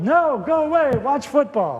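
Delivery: put-on high-pitched yelling. Retelling how the busy cook shooed him out of the kitchen, retelling a yell. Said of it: "And she yelled".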